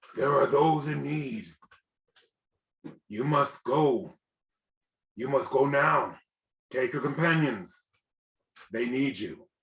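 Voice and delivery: husky sort of man's voice. Narrating, the speaker voices a voice heard over the listener's shoulder: husky male voice. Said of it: "it's a husky sort of male voice".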